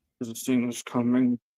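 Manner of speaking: words forced out past a clenched jaw. In a role-play scene, your character speaks to Bill through gritted teeth. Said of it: "he says through gritted teeth".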